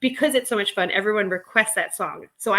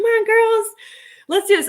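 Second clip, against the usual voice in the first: shrill, very high, loud cheering holler; 13 semitones higher, 6 dB louder than usual. Retelling cheering on a pool class: retelling a yell. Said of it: "I yells at them".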